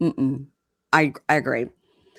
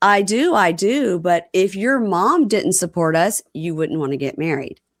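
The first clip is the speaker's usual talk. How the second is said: ordinary talk, nothing marked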